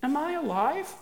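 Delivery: very high-pitched, bewildered, wondering tone. Kitty, lifted from the hay, asks Larry, bewildered.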